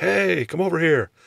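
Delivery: loud yell. Retelling a guy in a parking garage calling over: imitating someone yelling. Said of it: "some guy yells at me".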